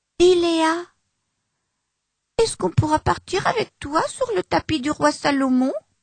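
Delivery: shy, timid voice. A character asks another character a question, in a timid voice. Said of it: "Demande la timide voix d'Achère".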